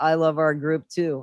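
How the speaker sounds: put-on sarcastic tone. Explaining how they read a remark in the group, retelling in sarcastic tone. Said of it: "I read it that way, sarcastically".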